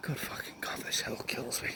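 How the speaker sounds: out of breath, soft, whispered under the breath. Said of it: "Sorry, I'm very out of breath".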